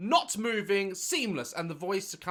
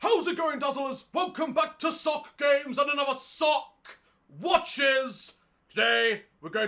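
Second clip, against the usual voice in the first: high, loud put-on sock puppet voice; 8 semitones higher, 5 dB louder than usual. Imagining a sock puppet taking over the Daz Games intro, sock puppet voice. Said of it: "Imagine if I let a sock puppet take over".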